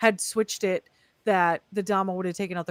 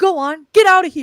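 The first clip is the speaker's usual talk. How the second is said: mock yell, higher and louder; 7 semitones higher, 13 dB louder than usual. Retelling a movie moment where someone throws a rock: imitating someone yelling.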